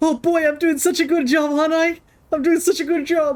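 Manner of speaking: smug, high, proud, self-satisfied bragging voice. Voicing the Pokemon as it seeks praise from its trainer: imitating the Pokemon bragging. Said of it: "He's like".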